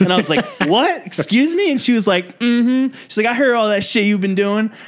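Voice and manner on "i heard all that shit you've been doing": put-on Southern accent with a reproachful tone. Retelling a woman confronting them, imitating her Southern accent. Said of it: "she had this like Southern accent".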